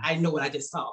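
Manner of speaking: ordinary talk, nothing marked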